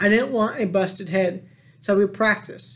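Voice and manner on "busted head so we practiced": ordinary delivery, nothing marked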